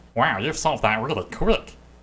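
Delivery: voiced boobling creature. Voicing a boobling that pops out of the wall: boobling creature voice. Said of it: "A boobling, uh, pops out of the wall".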